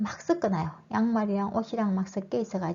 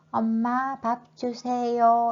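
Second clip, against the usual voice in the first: loud, syllable-by-syllable enunciation; 4 semitones higher, 5 dB louder than usual. Showing a child learning to talk who speaks distinctly: each syllable said separately. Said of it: "이렇게 말하면 아이가 말을 또박또박 하는 거죠".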